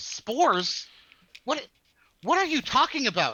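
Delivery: puzzled, baffled, confused tone, pitched high. Voicing a character the speaker just described: confused. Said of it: "He looks confused".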